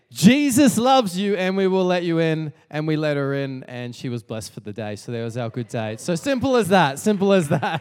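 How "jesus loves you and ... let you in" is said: loud, raised hollering yell. Retelling a drive where someone yelled to a driver: imitating Jeremy yelling. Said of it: "Jeremy yelled out to her".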